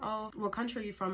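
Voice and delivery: ordinary talk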